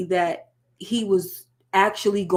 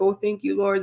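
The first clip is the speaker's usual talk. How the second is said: put-on tearful, crying voice. Retelling a scene where a young man hears good news: imitating someone crying. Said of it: "the guy was crying like".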